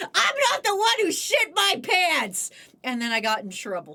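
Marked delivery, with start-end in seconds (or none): 0.0-2.5 acted-out, furious, high, angry shouting. Recalling yelling at a man in a retail job, retelling a yell. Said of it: "the time I yelled at a man".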